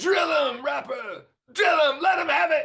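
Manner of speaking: play-acted excited yelling, very high and shrill. Retelling how Dave ran up yelling in his ear while he played, imitating Dave yelling. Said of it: "he's yelling in my ear".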